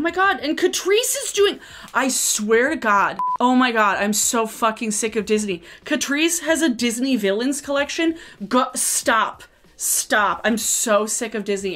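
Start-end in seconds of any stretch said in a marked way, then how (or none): 3.4-11.8 heated, annoyed, irritated ranting. Complaining about a Disney villains makeup collection: heated and annoyed. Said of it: "I am getting heated. I'm annoyed now".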